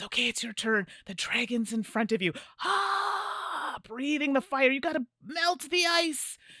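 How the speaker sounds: very high dragon voice with drawn-out "ah". Retelling leading a game with four-year-olds, taking the dragon role, in a dragon voice. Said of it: "I literally had that voice".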